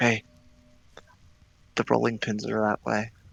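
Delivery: hushed whisper. Telling one person something on the side, whispering. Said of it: "I'm gonna whisper to Yagu".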